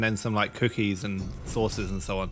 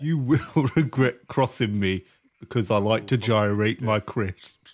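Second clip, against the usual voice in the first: own natural voice, pitched a bit deeper. Speaking as Bog Drinker to the challengers, in a slightly deeper own voice. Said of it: "basically your voice, but a little bit deeper".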